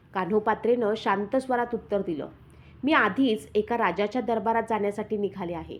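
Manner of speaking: plain reading voice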